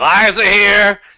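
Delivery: mock drunken voice, very loud, slurred and sloppy. Retelling how a substitute said a classmate's name, imitating a drunk substitute teacher. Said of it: "we had some drunken substitute one day".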